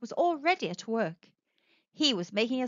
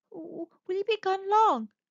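trembling, wavering, shaky voice with raised pitch; 8 semitones higher than usual. Jan asks Martin, who is going off with his tools, in a shaky voice. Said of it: "She asked him in a shaky voice".

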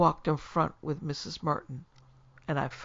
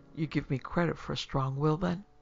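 usual speaking voice

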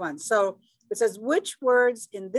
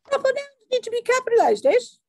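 terrible put-on British accent, pitched way up, loud; 6 dB louder than usual. Explaining a grammar rule to viewers, in a terrible British accent. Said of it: "I have a terrible British accent".

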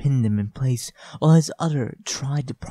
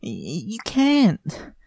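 high, stuttering, stammered, broken-up delivery; 7 semitones higher than usual. A woman struggling against a man stutters. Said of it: "Lily stuttered as they struggled".

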